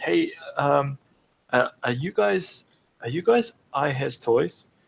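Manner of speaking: nervous, shy, bashful, halting, stumbling delivery. Retelling how a guy walked back around to them, imitating a nervous, shy guy. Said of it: "he was super nervous and super shy".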